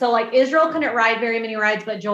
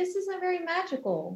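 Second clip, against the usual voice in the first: mock sweet, very nice tone, pitched up; 7 semitones higher, 11 dB quieter than usual. Retelling own past complaint about a hotel room: imitating saying it very nicely. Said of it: "I said it very nicely".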